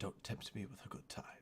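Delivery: very quiet, breathy, hushed whisper. A game master voices a character leaning in toward Hagatha; whispering in her ear. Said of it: "he leans forward and he whispers in your ear".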